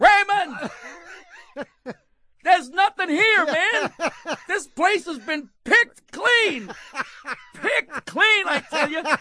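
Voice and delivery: very loud, very high, shrill booming yell. Retelling a cave tour story, imitating someone yelling. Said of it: "he yells out".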